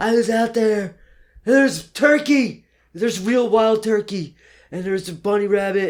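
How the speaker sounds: acted, all-excited, very high, loud gush. Retelling running back into his office: imitating own past excitement. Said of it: "all excited".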